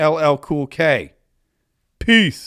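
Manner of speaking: speech broken up by laughing throughout. Signing off to everybody until tomorrow, laughing while talking. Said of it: "Let me try that again without laughing".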